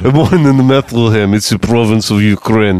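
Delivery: put-on heavy, comic Russian accent in English. Playing Jesus of Nazareth as a Russian man, in a Russian Jesus accent. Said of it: "Russian Jesus".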